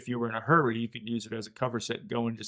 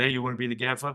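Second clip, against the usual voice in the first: put-on slight Brooklyn accent, faster pace. Retelling what Jim Finnerty said to him, in Jim Finnerty's slight Brooklyn accent. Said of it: "in his slight Brooklyn accent".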